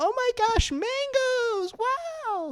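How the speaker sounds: very high sugary nice-lady gush with long wow. Mocking how a woman reacted to a man's grocery shopping: imitating a sweet, nice lady. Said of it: "she sounds like so like".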